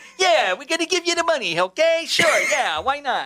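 put-on old-time gangster boss voice, pitched very high. Joking about how local government talks: old-timey gangster mob boss voice. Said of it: "old-timey gangster mob boss".

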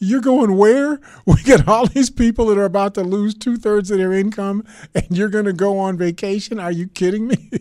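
mock very loud, fuming, furious outburst. Retelling how Nancy Pelosi reacted to the Senate's vacation: imitating Nancy Pelosi having a fit. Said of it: "Nancy Pelosi had a fit".

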